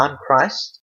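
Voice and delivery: ordinary talk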